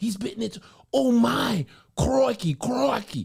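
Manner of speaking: rough, creaky, very high-pitched outburst. Doing an impression after being asked to hear it: Steve Irwin impression. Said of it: "I do a beautiful Steve Irwin".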